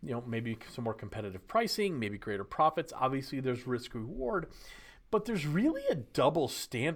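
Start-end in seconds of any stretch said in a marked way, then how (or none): 5.1-7.0 voice breaking mid-word, higher pitch. Explaining a double standard in the industry, voice cracking. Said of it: "did I just crack my voice".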